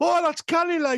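put-on very high-pitched, chattering Geordie accent. Retelling what people said back to the speaker, in a Geordie accent impression. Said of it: "Oncoming Geordie impression".

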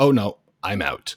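usual speaking voice

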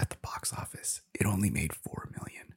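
sheepish, embarrassed, hushed half-whisper. Speaker tells the audience something embarrassing, whispering. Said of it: "I'm kind of whispering that because that's embarrassing".

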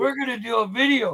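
imitated slurred drunk-sounding speech. Retelling a friend's drunken plan to make a video: imitating a drunk friend. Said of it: "you being drunk off your ass and going".

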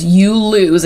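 sinister, menacing, creepy, dark taunting voice. Retelling a scene where he says the line: put-on creepy dark voice. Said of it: "in his creepy dark voice".

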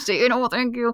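hissed through clenched teeth. Retelling prompting children in public, imitating talking through clenched teeth. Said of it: "with my teeth clenched".

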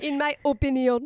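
fake French accent. Chatting in a kitchen table talk, giving a personal opinion: made-up french accent. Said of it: "You just made up a French accent of opinion".

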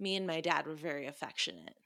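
put-on unsettling, disturbing, off-kilter delivery. Retelling what a character says to another character: imitating an unsettling delivery. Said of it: "she says in a very fucked up way".

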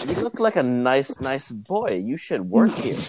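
friendly, sing-song put-on Lebanese accent. Telling of a man met at a racket stringing shop, the speaker imitates a lebanese accent. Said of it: "He has a Lebanese accent".

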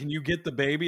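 plain

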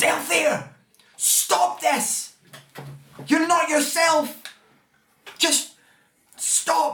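very high, drawn-out pleading scream. Voicing a character pleading with Althea: screaming in character. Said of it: "she looks up at you and screams".

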